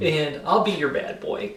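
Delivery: plain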